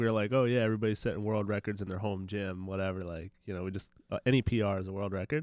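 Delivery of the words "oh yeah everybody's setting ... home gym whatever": ordinary talk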